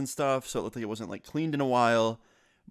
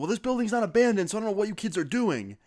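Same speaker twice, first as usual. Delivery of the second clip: mock, pitched-up yelling; 9 semitones higher than usual. Retelling the building owner yelling back: imitating a man yelling. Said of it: "And the guy yells back".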